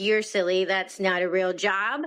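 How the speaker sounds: plain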